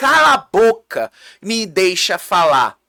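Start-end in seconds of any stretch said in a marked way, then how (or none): none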